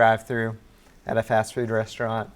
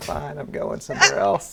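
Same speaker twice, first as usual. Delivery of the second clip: mock, rough, angry, exasperated outburst; 2 semitones lower than usual. Retelling getting angry at a drive-thru: retelling an angry outburst. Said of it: "I just kinda erupted".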